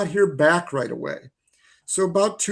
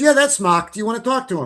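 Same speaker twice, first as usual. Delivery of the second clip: put-on, high-pitched New England (Massachusetts) accent; 7 semitones higher, 4 dB louder than usual. Retelling a woman answering his phone call, in a put-on Massachusetts accent. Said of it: "try my, you know, Fidrich accent here".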